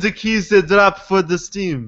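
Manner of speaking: put-on Russian-accented voice. Voicing a question from a man who reads the blog: russian accent. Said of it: "why are you giving this guy a Russian accent?".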